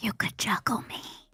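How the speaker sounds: breathy character whisper. Whispering into Buttercup's ear in character: whispering in character. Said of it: "I'm going to whisper into Buttercup's ear".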